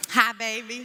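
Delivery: easy, relaxed Southern drawl. Repeating a greeting on request: Southern accent. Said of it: "You gotta say it Southern".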